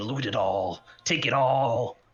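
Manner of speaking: slow, small goblin-creature voice. A player asks the group whether they can hear it, then speaks in a little goblin voice. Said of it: "hear the little goblin voice saying".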